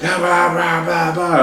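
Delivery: put-on high, drunk blah-blah babbling voice.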